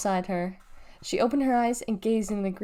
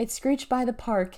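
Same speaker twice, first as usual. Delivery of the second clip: ordinary delivery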